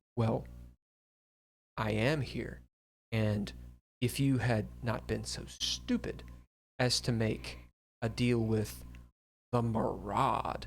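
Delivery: deep, low female voice. A hidden speaker answers the sniffling woman, in a deep female voice. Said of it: "a deep female voice".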